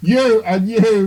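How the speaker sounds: high, loud, slow, commanding, intimidating voice. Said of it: "in sort of as commanding, intimidating your voice".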